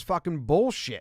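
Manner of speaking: ordinary delivery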